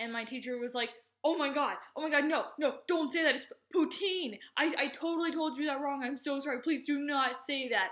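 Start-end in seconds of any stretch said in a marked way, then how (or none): 1.2-7.9 frantic, apologetic, high, loud freaked-out babbling. Retelling a teacher realizing she taught the wrong word: imitating a teacher freaking out. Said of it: "she was freaking out".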